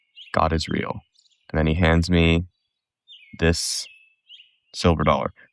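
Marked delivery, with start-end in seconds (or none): 0.4-1.1 quiet whisper. Retelling what he whispered into the speaker's ear: imitating a whisper. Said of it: "he whispers into my ear".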